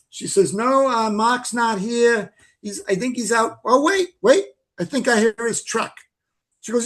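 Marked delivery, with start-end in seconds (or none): 0.5-5.9 high, put-on New England Massachusetts accent. Retelling what Anne said on the phone, imitating Anne's New England accent. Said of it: "try my, you know, Fidrich accent here".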